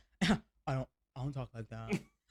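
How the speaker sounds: horrible, very deep, very low, dry stoic voice. Imitating a stoic, dry gym coworker: horrible impression of a stoic, dry man. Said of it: "It's a horrible impression of me".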